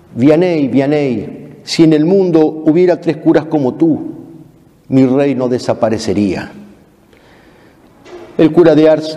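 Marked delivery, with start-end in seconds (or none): none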